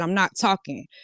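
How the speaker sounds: usual speaking voice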